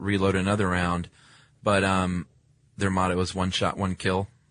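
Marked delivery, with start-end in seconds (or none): none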